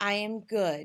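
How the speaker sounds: falling statement tune, voice dropping on "good". Speaker demonstrates how the voice slides down when finishing a sentence; falling statement intonation. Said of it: "and it's down".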